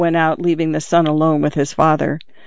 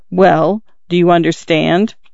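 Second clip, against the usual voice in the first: plain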